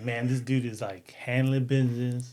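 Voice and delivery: ordinary talk, nothing marked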